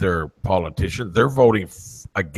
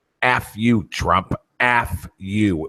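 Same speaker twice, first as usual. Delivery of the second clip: mock angry scream; 2 semitones higher than usual. Retelling a street interview supporter's final outburst: imitating a scream. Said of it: "until she screamed and put her middle finger".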